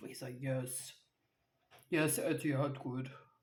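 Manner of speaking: very deep, put-on bass voice. Imitating a husband's answer about Etihad, really deep voice. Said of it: "He speaks in this like really deep".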